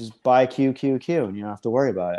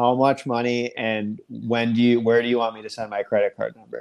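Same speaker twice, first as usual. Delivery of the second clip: ordinary talk, nothing marked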